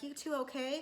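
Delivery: sweetly innocent, butter-wouldn't-melt tone. Retelling how Jessica walked in on a talk: imitating an innocent tone. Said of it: "she comes in all innocently".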